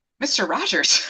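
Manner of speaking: ordinary delivery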